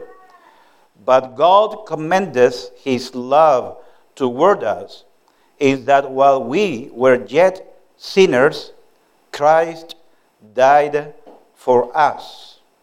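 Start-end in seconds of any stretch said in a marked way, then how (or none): 1.0-12.6 slow, careful reading, each word deliberate. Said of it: "pay attention to every word".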